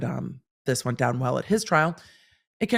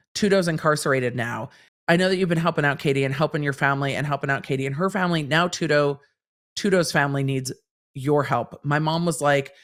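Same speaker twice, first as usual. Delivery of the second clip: ordinary delivery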